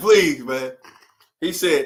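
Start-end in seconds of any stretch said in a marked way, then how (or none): 0.0-0.7 imploring, pleading, begging voice. Retelling how the dispatcher begged, imitating someone begging. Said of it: "he's begging me like".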